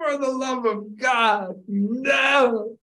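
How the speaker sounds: very high sobbing wail, "no" drawn out. Speaker retells spilling a milkshake all over themselves: retelling own crying. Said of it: "and I'm crying. I'm going".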